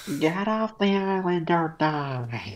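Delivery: cartoon voice with the final word "die" stretched out. Reading a meme drawing's caption aloud in Squidward's voice. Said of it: "I read it in, like, Squidward's voice".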